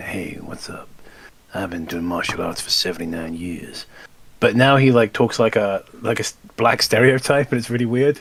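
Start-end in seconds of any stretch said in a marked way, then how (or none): 0.0-3.9 low, deep, easy voice without drawl. Describing how an actor used to talk: Steven Seagal impression. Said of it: "he used to talk like this".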